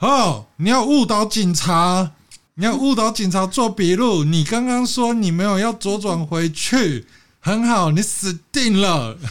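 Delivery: big, high, slow, loud bellowed shout. Retelling how a friend yelled at someone at the scene: retelling a friend's shout. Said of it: "我朋友马上就大喊说".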